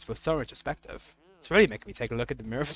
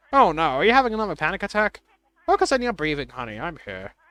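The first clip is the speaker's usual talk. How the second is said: put-on elderly woman's voice. Voicing the mom character as she talks to her daughter Madeline: old lady voice. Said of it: "Is that a good old lady voice?".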